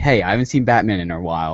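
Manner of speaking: ordinary talk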